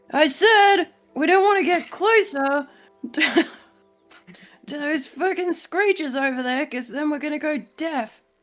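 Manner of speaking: slow, deliberate yelling, spelled out letter by letter. Repeating a warning in character to another speaker: yelling. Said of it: "No, no need to yell".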